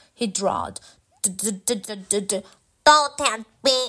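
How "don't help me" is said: halting, stammering, stuttering speech. Reading a story, Wiggs, pulled out of his seat by his jacket, speaks stammering. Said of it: "stammered Wiggs".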